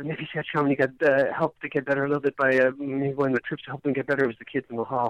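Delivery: hushed half-whispered aside. Speaker admits something he can't believe he's saying, half-whispering. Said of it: "I'm going to whisper this so nobody can hear it".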